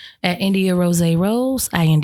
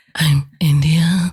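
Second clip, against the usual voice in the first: mock sexy voice, lower and louder; 3 semitones lower, 4 dB louder than usual. Copying the other speaker's voice for a joke: imitating a sexy voice. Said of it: "Here she go with that sexy voice".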